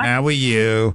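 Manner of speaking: put-on New York accent. On a call-in show, the host contrasts a friendly Utah greeting with a New York accent. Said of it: "if it was from New York".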